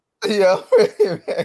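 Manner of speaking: words breaking with laughter. Answering that they are ready for their debate round: laughing while talking. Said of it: "I can't stop laughing".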